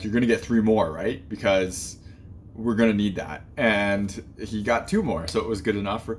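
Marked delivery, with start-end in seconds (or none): none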